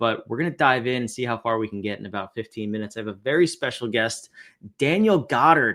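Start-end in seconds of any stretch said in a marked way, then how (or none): 4.8-5.8 American-sounding accent. A host introducing a special guest: American accent on Daniel Goddard. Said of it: "Did I do a appropriate American accent there?".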